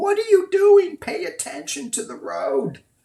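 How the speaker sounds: very high, shrieking, scolding scream. Recalling riding with a driver who talked to her guides, imitating a scream. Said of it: "my three D self is screaming".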